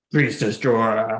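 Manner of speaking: amplified voice. Tabletop player's character sneaks up using thaumaturgy, calling out in a magically amplified voice. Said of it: "Making my voice louder and just going".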